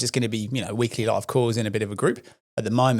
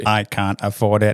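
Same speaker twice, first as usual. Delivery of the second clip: put-on, mechanical robotic AI-style voice; 4 dB louder than usual. Asked to do an AI voice: R2-D2 style AI voice. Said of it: "Do an A I voice. ... That's R two D two".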